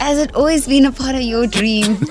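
amused, laughing tone, said through laughter. Asking about a planned proposal, in a laughing tone. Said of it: "Why are you saying it in such a laughing tone?".

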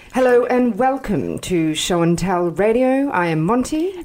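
mock newsreader voice with put-on British accent. Asked for their best newsreader voice, monty introduces the show in a british newsreader voice. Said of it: "All of a sudden British".

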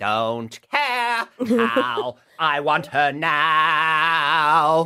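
high, very slow, stretched long, drawn out. Introducing a guest on air, quoting in a Veruca Salt voice. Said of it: "in the words of Veruca Salt".

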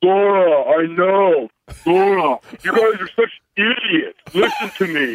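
slow bro voice, every word drawn out. Retelling what he always says to the speaker's wife: Brady Quinn impression. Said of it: "Brady Quinn impressions".

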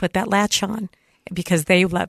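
tearful, moved, emotional delivery. Urging parents to buckle children into car seats, teary and emotional. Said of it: "pardon me for the tears".

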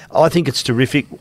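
plain

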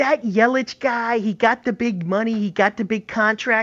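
high, slow, drawling mock Midwest accent, radio-caller style.

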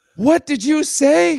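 high, slow, drawn-out, furious delivery.

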